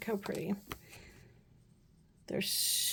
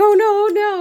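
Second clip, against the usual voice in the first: high, loud panicked cry. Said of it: "trying to catch yourself and be like".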